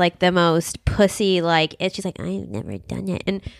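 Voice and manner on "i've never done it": barely audible, very quiet, hushed mutter under breath. Retelling a chat about flying private, muttering like Katie. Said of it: "I like mutters, like under her breath".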